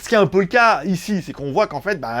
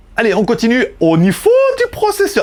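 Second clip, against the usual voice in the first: high, swooping, proudly done fake German accent; 5 semitones higher, 4 dB louder than usual. Presenting phone specs to viewers, in a put-on german accent. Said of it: "je fais super bien l'accent allemand".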